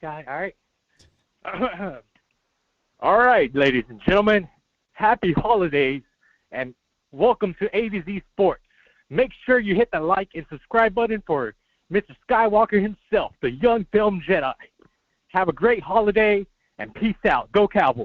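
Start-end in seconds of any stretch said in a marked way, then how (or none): 3.0-18.1 booming, very loud sports announcer voice. Host closing a caller's segment with one voiceover for his show: announcer voiceover voice. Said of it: "I'm gonna do one voiceover".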